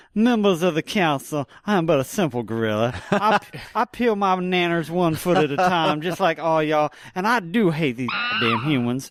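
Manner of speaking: imitated good old Southern lawyer. Imitating an actor playing a gorilla: good old Southern lawyer voice. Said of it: "hooking his thumbs under his braces and going".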